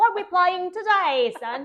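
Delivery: put-on English accent, very loud and high. Suggesting an easy way for adults to get into play, the speaker uses an English accent. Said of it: "like talking in an English accent".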